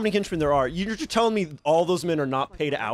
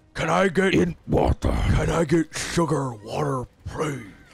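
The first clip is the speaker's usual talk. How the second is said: put-on slack-jawed, slurred bug-creature voice. Being coached by others on a cockroach guy impression, trying the slack-jawed slurred cockroach guy voice. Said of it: "do your cockroach guy impression".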